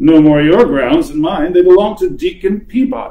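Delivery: scornful, sneering tone. Narrator voicing Tom answering a stranger, sneering. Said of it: "But Tom was a hard-minded fellow, not easily daunted".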